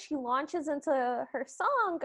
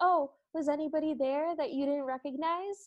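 mock cheeky, pointed, needling, very sassy tone; 2 semitones higher, 3 dB quieter than usual. Retelling Cinderella pointedly questioning her stepsisters: imitating sassy Cinderella. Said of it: "she gets, like, real sassy".

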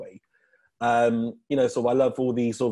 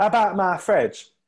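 fake London accent, much higher pitch, slower; 8 semitones higher, 4 dB louder than usual. Chatting about joke material, trying a bad london accent. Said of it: "my best London accent".

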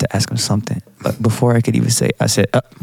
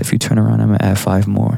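ordinary talk, nothing marked

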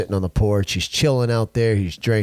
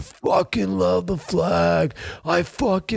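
very high raspy hollering, "flag" stretched; 10 semitones higher than usual. Retelling what a driver yelled through his window: imitating a man yelling. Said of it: "he yells at me".

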